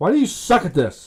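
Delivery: a little upset, griping. After another failed generation, the speaker scolds the tool, a little upset. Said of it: "I got a little upset there".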